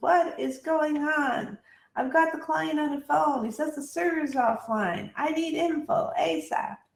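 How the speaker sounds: high, unhappy, acted-out mild half-yell. Retelling a salesman joining a Zoom call: imitating someone screaming. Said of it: "Jeff starts screaming to everyone".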